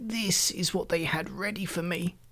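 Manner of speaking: put-on soft, trembling, quavering old man voice. The old man holds up the garment they had ready for him, quavering. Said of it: "he quavered".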